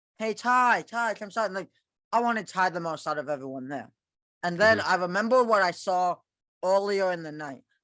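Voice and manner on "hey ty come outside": light, high, acted calling out. Telling of shouting to a player on the field, retelling a shout. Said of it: "I start shouting".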